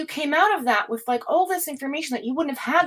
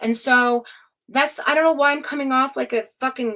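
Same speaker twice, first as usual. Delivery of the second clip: ordinary talk, nothing marked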